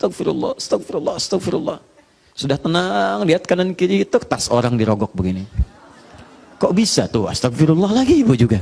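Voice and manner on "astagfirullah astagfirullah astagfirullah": put-on tearful crying, quieter. Acting out a person seen on CCTV after prayer, imitating someone crying. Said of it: "kayak orang menangis".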